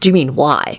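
plain

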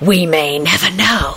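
whispering dramatically, theatrical. A character answers another's alarmed question about Longbottom, in a dramatic whisper. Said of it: "Kingsley replied in a dramatic whisper".

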